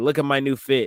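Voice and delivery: plain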